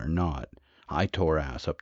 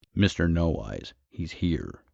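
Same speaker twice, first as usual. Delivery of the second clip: ordinary delivery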